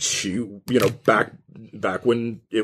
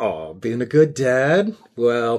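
playfully shy, coy. Voicing a character leaning in at the bar toward a player: coy. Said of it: "leans in kinda coyly".

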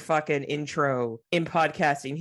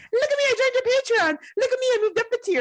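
put-on needy little child voice, higher and louder; 4 dB louder than usual. Playing the younger sibling dying for attention: attention-starved younger sibling. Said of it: "the younger sibling that's dying for their attention".

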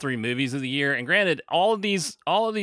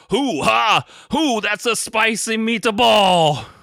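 put-on loud, slow, pitched-up Italian accent; 8 semitones higher, 6 dB louder than usual. Mocking a film's accents: Al Pacino with a mock Italian accent. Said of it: "Al Pacino ... he's like".

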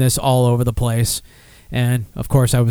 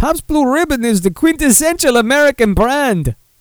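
attempted Russian accent, pitched way up; 13 semitones higher than usual. Reading a quote from a beverage chairman aloud: Yakov Smirnoff impression. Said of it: "now I'm doing Yakov Smirnoff".

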